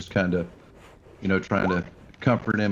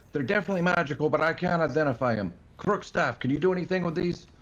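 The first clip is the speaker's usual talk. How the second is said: high-pitched, loud yell. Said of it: "I just yell out to everybody".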